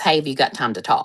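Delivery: ordinary talk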